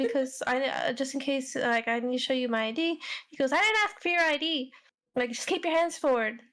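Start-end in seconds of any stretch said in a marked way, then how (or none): 0.0-3.0 mock halting, fumbled speech, slower. Retelling what a man said while being confronted, imitating stumbling over words. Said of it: "he's stumbling on his words".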